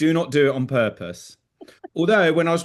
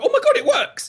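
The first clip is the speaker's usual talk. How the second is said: mock thrilled, very high excited exclamation. Retelling a reaction during groundwork with horses: imitating own excited reaction. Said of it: "I get really excited".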